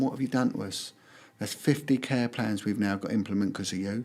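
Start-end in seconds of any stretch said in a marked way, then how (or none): none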